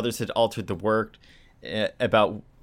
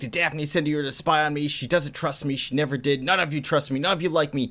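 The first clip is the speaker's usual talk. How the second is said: put-on yell, pitched up, held at talking volume; 5 semitones higher than usual. Retelling a comic scene where a character yells at Scooby-Doo: imitating someone yelling. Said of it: "And she yells at him".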